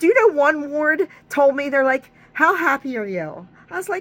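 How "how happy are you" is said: ordinary talk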